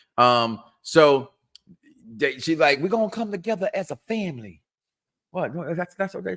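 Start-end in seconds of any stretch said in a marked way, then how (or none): 2.8-4.6 put-on woman's voice, pitched up high. Quoting what she said, imitating a woman's voice. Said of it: "You use that voice for?".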